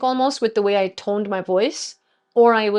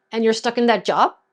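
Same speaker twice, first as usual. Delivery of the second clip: rising, judging, upward questioning inflection. Speaker demonstrating how intonation changes a sentence's message, rising, judging question intonation. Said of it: "my voice is going up".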